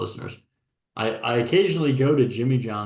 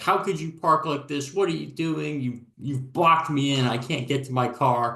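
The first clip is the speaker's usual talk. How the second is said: high-pitched mild yell, screaming style, held in; 5 semitones higher than usual. Retelling a woman screaming at me over my parked car, imitating her screaming. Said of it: "she just starts screaming at me".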